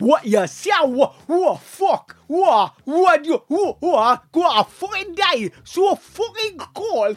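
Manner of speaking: put-on Geordie accent. Speaker explaining the Newcastle accent as a way of surviving the cold, Newcastle accent. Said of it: "The Newcastle accent is just an attempt to survive the fucking cold".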